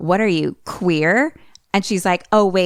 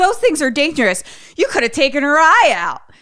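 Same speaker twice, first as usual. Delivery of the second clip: put-on high, scolding, hollering old-man yell; 8 semitones higher, 3 dB louder than usual. Retelling a scene, voicing an old man yelling at people to stop water balloon fighting. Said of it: "old man is like yelling at them".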